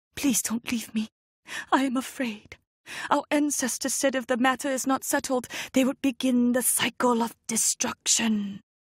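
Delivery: raspy, frightened, hoarse stage-whisper plea. First-person narrator calling to her mother not to leave her, hoarse whisper. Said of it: "I called to her in a hoarse whisper".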